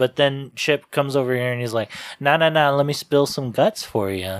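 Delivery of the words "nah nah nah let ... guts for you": normal talking voice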